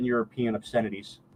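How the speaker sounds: ordinary talk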